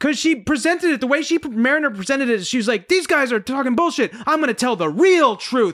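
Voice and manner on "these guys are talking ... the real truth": acted angry, pissed-off tone. Describing a TV episode and quoting a character; retelling someone pissed off. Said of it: "she was all pissed off".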